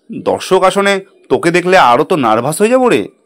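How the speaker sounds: ordinary delivery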